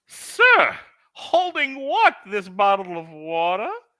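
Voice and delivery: very high, naive, guileless, innocent sing-song voice. Speaker retells answering a man who asked if they were holding, put-on innocent voice.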